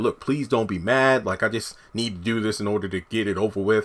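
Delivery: mock begging, pleading tone. Retelling what a man said to a woman, retelling someone begging. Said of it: "Zach is just like begging and pleading".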